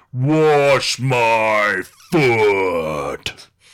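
loud thunderous boom, "my" drawn out. Narrating a story, voicing the wife's thunderous booming voice. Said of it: "a thunderous voice that said".

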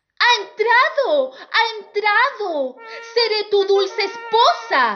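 shrill, very high-pitched shout. A stepsister forces her foot into the slipper before the prince; shouting. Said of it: "ella gritó más".

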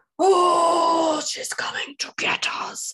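creepy villain voice, long "oh". A co-host acting out a bit on the show, in a Voldemort voice. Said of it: "I sound a bit like Voldemort".

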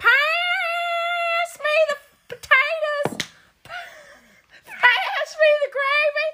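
shrill, very high, slow, drawn-out country holler. Showing how your mama talks compared with Katie's soft-spoken parents, imitating a country-loud, high-pitched mama. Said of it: "My mama is country loud".

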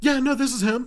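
put-on high phone voice. Showing how one sounds answering the phone: imitating a raised phone voice. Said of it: "your voice, like, raises an octave".

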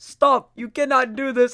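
shrill, very high, loud yell, barely holding laughter. Retelling a man in a scripted video trying to stay in character; imitating stifled laughter. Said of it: "And he's just trying not to laugh".

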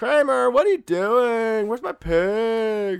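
high, loud squeal, stretched on pig. Continuing the joke with a bad Seinfeld impression. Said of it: "I can't do my Seinfeld very well".

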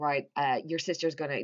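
ordinary delivery

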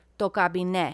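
said with authority. Correcting the other speaker on a greek phrase, said with authority. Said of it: "she just said that with authority".

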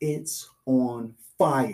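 mock yell, mild and muffled. Retelling how the driver turned around in the car, reenacting his scream. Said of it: "he turns around and screams".

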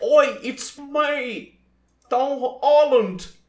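put-on British accent, very high, very loud, very slow. Showing the others how he talks, imitating his British accent. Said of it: "é assim que ele fala".

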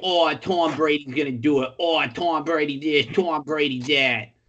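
put-on Boston accent, New England style. Imitating the Patriots fans watching the game around him: New England fan accent. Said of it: "That's a great accent".

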